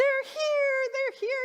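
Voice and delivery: mock thrilled squeal, very high and very loud. Retelling how the new kittens' arrival was greeted: retelling her excited exclamation. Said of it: "I was so excited".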